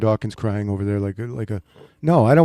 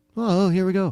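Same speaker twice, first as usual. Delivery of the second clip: mock giddy, kid-like excitement, pitched-up sportscaster-style delivery; 9 semitones higher than usual. Imitating Tony Romo's excited call: imitating Tony Romo's excitement. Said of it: "he gets all excited like a little ten-year-old".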